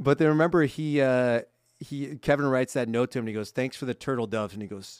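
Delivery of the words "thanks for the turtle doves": normal talking voice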